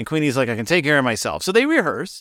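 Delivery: ordinary delivery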